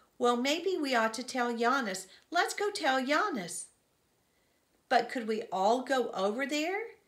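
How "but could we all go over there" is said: unsure, doubtful, uncertain tone. One of the kids questions the group's plan, doubtful. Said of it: "Yella asked doubtfully".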